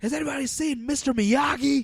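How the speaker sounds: shrill, very loud, high scream from full lungs. Retelling a manager on Valium yelling across the restaurant: imitating someone screaming. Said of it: "he screams at the top of his lungs".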